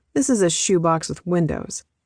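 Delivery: plain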